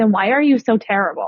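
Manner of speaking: ordinary talk, nothing marked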